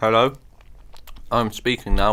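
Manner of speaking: speaking with mouth full, chewing. Speaking to another speaker while eating a sandwich: talking with mouth full. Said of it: "I'm still got a mouthful of sandwich".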